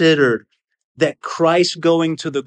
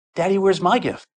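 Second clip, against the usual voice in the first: put-on sweet little-girl voice; 3 semitones higher than usual. A father retelling his very little girl asking for her gift, little sweet voice. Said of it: "she says with this little sweet voice".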